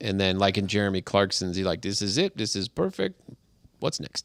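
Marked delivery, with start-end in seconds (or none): 1.8-4.3 put-on German accent, speaking English. Retelling how engineers reacted to a finished car, in a German accent. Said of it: "that's a German accent".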